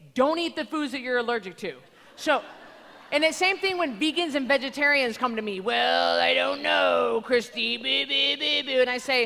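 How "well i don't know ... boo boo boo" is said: very slow, rough, creaky mocking voice. Retelling what vegans and vegetarians say to her: mocking voice of vegan clients. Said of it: "I like doing the voice".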